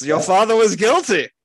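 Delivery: put-on upper-class East Coast academic accent. Quoting a professor's verdict on a father: East Coast semi-British academic accent. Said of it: "East Coast, semi-British academic elite accent I was trying to do".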